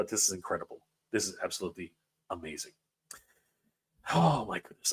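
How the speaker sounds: choked up, soft, rushed words. Speaker thanking the audience for money toward a goal, choking up. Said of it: "I'm I'm really choking up here".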